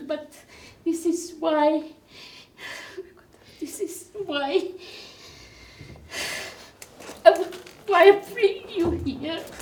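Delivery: voice overcome with emotion, near tears. Addressing the group at the end of peace camp, the speaker is very emotional. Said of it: "Excuse me if I'm if I'm very emotional".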